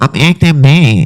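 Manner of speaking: put-on nasal, whining voice. Imitating a woman who is a nasal talker, put-on nasal voice. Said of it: "she a nasal talker".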